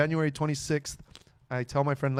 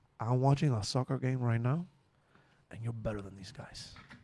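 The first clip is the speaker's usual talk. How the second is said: put-on broken English, quieter; 3 semitones lower, 6 dB quieter than usual. A comedian retells his dad's reply on the phone, imitating his dad's broken English. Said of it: "My dad can't express himself well in English".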